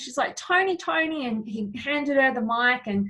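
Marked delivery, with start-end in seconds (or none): 0.3-1.3 acted-out, high, far-carrying yelled call. Retelling how a woman across the room called out to Tony, imitating her yell. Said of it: "she yelled out to Tony".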